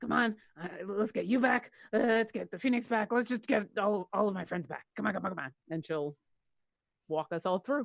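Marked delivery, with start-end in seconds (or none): 0.0-5.5 muttered, self-encouraging, urging tone. Voicing a character helping a friend through a portal: under her breath. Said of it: "under her breath she'll be like".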